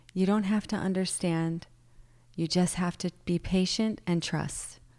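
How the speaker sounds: imitated sweet voice. Retelling what ayahuasca said at a retreat: imitating a sweet tone. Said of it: "said to me so sweetly".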